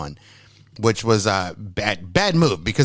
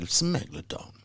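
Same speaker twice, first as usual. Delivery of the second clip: put-on breathy near-whisper, breathed out; 4 semitones lower, 10 dB quieter than usual. Describing how a word has to be said: Jason Statham voice. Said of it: "you have to say it like Statham. You have to just be like".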